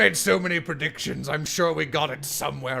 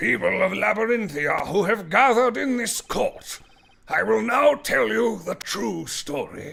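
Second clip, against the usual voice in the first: put-on elderly man voice, higher; 7 semitones higher, 4 dB louder than usual. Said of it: "how many old man voices [name] can do".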